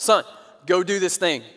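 stern, authoritative dad voice. Retelling ordering a son who ignored them: dad voice. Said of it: "like I got dad voice on".

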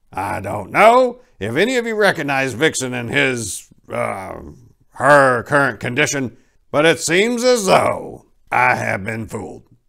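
firm, stern voice. Santa speaks to the reindeer gathered at his workshop, stern.

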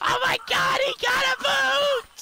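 put-on ecstatic excitement, very high. Speaker doing the ecstatic reaction on another person's behalf: fake ecstatic excitement. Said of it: "I'm doing the ecstatic emotations for you!".

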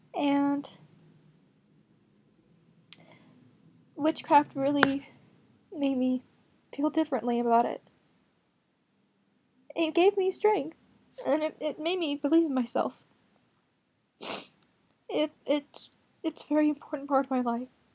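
tearful, crying while speaking. Sharing something personal, the speaker talks while crying. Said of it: "Sorry about crying".

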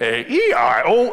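awful, intense, possessed electronic spelling-toy voice. Describing an old spelling toy, imitating its horrible voice. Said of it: "but in this horrible voice".

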